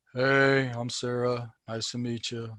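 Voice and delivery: uninterested, flat tone. Giving advice on introducing yourself, the speaker shows how not to sound: bored. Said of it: "don't sound like you're bored and you don't want to be there".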